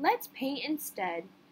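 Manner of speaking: ordinary delivery, nothing marked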